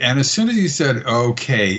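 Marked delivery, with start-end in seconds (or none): 1.0-1.8 put-on exasperated tone, pitched higher. Retelling a professor's one-word reply, imitating an exasperated tone. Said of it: "with a, a, an exasperating tone".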